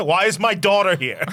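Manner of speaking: loud, high-pitched, demanding yell. Recapping a scene, the speaker acts out the governor yelling at people in the swamp: imitating someone yelling. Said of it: "And he yells at them".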